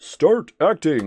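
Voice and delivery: very loud, high, booming game-announcer voice. Repeating a short phrase in a Smash Brothers announcer voice. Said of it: "makes me want to say that in like Smash Brothers announcer voice".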